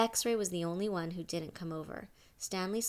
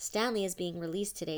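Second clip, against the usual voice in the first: ordinary delivery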